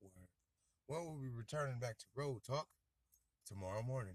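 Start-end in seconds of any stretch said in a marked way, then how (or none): 1.1-4.2 put-on broadcaster-style radio announcer voice. Signing off a podcast episode in a radio announcer voice. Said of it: "That's a radio voice".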